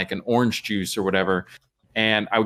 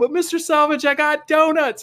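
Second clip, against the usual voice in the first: mock very high scream from far away; 3 dB louder than usual. Retelling arriving down a long hallway: retelling own screaming.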